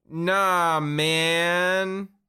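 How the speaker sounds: put-on sarcastic, angsty kid voice, loud. Pitching a comic character idea, imitating a sarcastic angsty kid. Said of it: "angsty kid that always is sarcastic".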